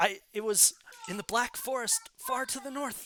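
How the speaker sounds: high, shaken, rattled stammer. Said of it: "Ujuk is a little shaken".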